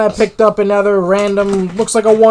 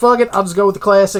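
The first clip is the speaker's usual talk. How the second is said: plain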